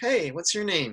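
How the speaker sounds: warm, easy, welcoming voice. Retelling meeting Joe Bob in person: imitating Joe Bob's warm, inviting voice. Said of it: "a very warm, inviting, inviting voice".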